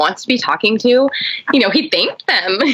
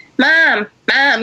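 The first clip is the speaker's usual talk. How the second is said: put-on small, childish little baby voice calling out; 4 semitones higher than usual. Mother imitating her son calling for her instead of sleeping: little baby calling voice. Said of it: "You know that little baby calling voice".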